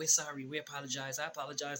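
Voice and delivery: voices of tiny little men. Retelling voices heard in headphones: imitating little men's voices. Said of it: "little men voices".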